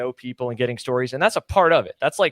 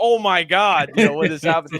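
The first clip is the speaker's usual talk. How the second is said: excited, full announcer-style call; 4 semitones higher, 4 dB louder than usual. Retelling announcing a crash during a race: imitating full announcer mode. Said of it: "in the full announcer, like".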